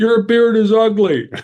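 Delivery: very high-pitched yell. Retelling how a passing guy on the trail turned around: imitating someone yelling. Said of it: "Then he turned around and yelled".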